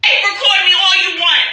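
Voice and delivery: screaming defiance. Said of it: "Can you please stop screaming?".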